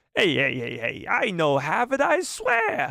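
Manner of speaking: high, swooping, strange sci-fi alien creature voice. A creature accused of stealing a lightsaber answers: alien creature voice. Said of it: "He almost is a combination of Jar Jar Binks meets Watto".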